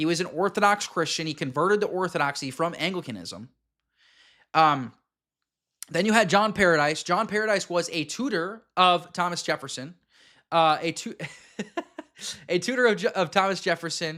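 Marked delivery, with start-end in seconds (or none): 10.5-14.2 words broken up by laughter throughout. Distracted by the chat in the middle of a history account, laughing while talking. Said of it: "I'm laughing at the chat here".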